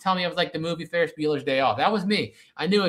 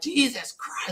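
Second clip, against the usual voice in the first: breathy, half-whispered, frustrated angry outburst; 6 semitones higher than usual. Retelling losing a video game fight and getting mad: retelling own angry yell. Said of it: "I yelled out loud".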